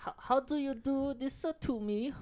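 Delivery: very high-pitched put-on fake Chinese accent. Doing an accent after another speaker asks for it: put-on chinese accent. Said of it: "Do the accent".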